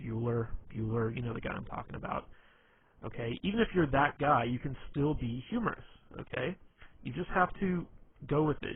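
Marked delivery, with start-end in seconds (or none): 0.0-1.2 droning, flat monotone. Speaker telling listeners anyone can be funny, doing a monotone Ben Stein voice. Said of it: "speaks with like a monotone Ben Stein type voice".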